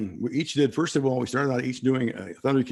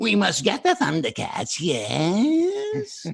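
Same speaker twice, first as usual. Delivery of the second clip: sneaky, slow sing-song cartoon villain voice, "yes" drawn out; 8 semitones higher than usual. Showing the villain voice built for a cartoon: sneaky villain voice. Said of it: "I kinda put that sneaky".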